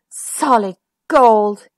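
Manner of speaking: sighing, sighed words. Reading a bedtime story, a prince takes his present to bed, sighing. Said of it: "he sighed".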